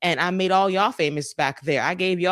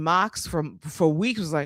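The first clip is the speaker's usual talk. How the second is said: ordinary delivery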